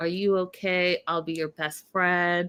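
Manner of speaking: mock soothing, reassuring tone. Recapping a show, the speaker acts out a man's words, imitating soothing reassurance. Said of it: "He's assuring her, he's nurturing her".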